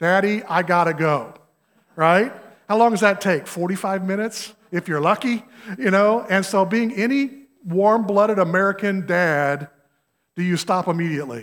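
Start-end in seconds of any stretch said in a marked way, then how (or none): 0.0-1.3 put-on slow, drawn-out child's voice. Retelling a child in the back seat asking to stop: imitating a child in the back seat. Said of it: "one of them says".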